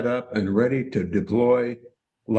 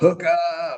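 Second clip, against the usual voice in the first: high-pitched holler; 6 semitones higher than usual. Describing a jig strike while trolling: imitating someone hollering. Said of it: "somebody hollers".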